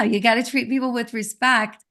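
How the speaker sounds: ordinary talk, nothing marked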